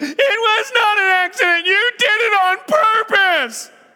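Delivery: put-on very high, very loud, tearful bawling child. Recalling a sibling's childhood excuse, imitating a crying kid. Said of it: "a pretty good impersonation of a kid crying".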